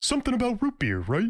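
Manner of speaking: high cartoon voice. Giving a quote a spin so the listener recognizes it: Patrick voice. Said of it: "If I say it in a voice, you will probably get it immediately".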